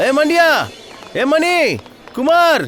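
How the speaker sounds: shouting up high. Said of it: "ఎందుకు అరుస్తావ్?".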